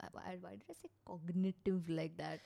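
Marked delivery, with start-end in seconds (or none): none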